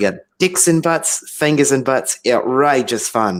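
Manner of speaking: loud put-on Australian accent. Retelling a skit, quoting an Australian man at a dock, in an Australian accent. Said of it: "the only Australian accent I could do".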